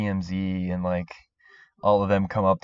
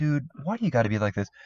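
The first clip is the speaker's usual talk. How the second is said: pitched-up, annoyed tone, still friendly; 6 semitones higher, 6 dB quieter than usual. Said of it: "trying to be nice, but he's, like, annoyed".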